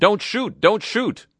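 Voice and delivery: high, loud yelling.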